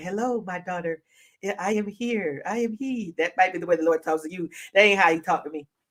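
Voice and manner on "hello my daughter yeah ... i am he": nice, gentle, soft, slow, soothing voice. Speaker imitating how the Lord might speak to a listener, imitating the Lord's gentle voice. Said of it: "He might come at you with a nice, gentle voice".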